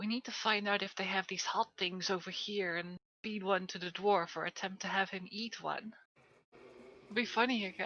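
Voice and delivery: fast, scheming half-whispered aside. In a role-play session, a player's character speaks to a companion: half-whispering. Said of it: "I whisper to Erica".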